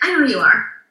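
put-on cool tone. Retelling how a man answered her greeting: imitating him sounding cool. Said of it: "he was just kinda, like, cool".

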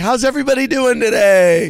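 big booming announcer voice, high and loud. Retelling standing up in court with a microphone, booming into the microphone. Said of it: "I was booming my voice into the microphone".

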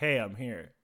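lifeless, dull delivery with zero enthusiasm. Retelling a contestant's entrance line, imitating Manny Morphosis's dull unenthusiastic delivery. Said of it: "unenthusiastic, dull way I've ever heard".

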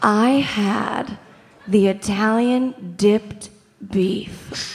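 very slow, every word stretched out. Telling a Portillo's order with everyone's eyes closed, really slow. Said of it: "I'll tell you really slow".

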